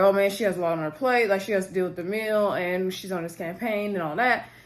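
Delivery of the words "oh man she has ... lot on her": plain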